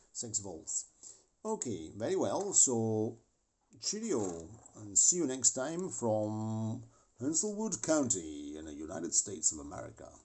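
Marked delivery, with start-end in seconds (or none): 3.8-10.1 very fake, phony American accent, from drawn out. Video host signing off: very phony American accent. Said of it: "That was my very phony American accent".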